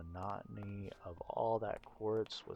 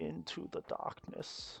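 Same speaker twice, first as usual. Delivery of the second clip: very bad put-on villain voice, rough, creaky, high; 8 semitones higher than usual. Heading back into the darkness: very bad Bane impression. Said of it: "It kind of sounded like a very bad impression of Bane from Batman".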